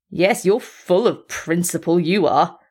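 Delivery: intense, scornful, heavy with contempt. After swearing violently, he mocks someone who won't witness a fight, with intense scorn. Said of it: "saying with intense scorn".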